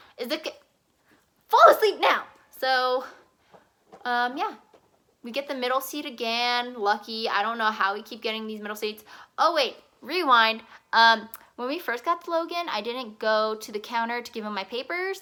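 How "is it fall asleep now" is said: exasperated, pleading tone. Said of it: "And I'm like".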